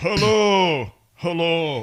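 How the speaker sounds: talking belly voice. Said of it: "what's your stomach voice?".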